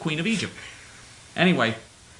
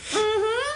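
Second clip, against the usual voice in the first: high, dismissive mm-hmm. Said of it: "She gave me the mm-hmm".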